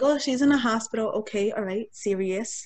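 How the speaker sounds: ordinary delivery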